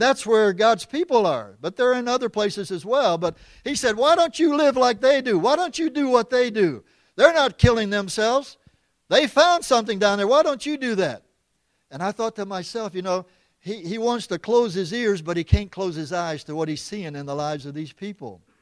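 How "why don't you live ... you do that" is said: mock screaming voice, raised and high-pitched. Retelling a man's words to his village: imitating someone screaming. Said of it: "he was screaming at the top of his lungs".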